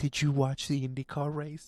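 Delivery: motherly, mom-like voice. Teasingly repeating the other speaker's mom's question, mimicking her voice. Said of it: "I love the fact that you're mimicking your mom's voice".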